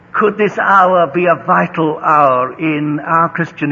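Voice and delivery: plain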